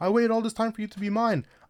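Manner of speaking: high, mushy simpering voice. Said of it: "He's on some simp glacier saying".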